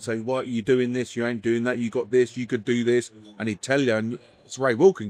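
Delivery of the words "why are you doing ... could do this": mock-stern, stern delivery. Recalling how his mentor pulled him aside, retelling a stern talking-to. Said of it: "he'd tell me sternly as well".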